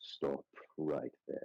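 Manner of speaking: low, breathy, whispered throaty rumble. Narrating a scene, the grisly man holding a blade to your throat speaks: low rumbling voice. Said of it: "a sound kind of rumble from his throat".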